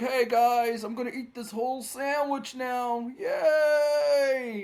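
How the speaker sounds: very high, very slow, lazy drawl, "yay" stretched. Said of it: "Ozzy's taking it easy, and he's like".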